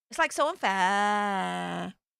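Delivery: put-on, slow, drawn-out Valley Girl accent. Trying a Valley Girl after saying they can't do American: put-on Valley Girl accent. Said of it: "I think I can do a Valley Girl. Like, hang on".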